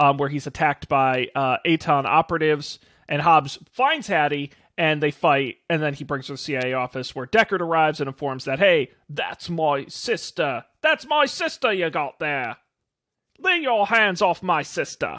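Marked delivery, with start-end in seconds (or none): 8.6-15.2 slow, deliberate, emphatic delivery in character. Retelling a movie scene where Deckard claims his sister: Deckard impression. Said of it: "I've been working on my, uh, my impression".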